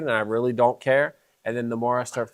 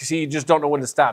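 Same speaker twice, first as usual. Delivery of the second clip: ordinary talk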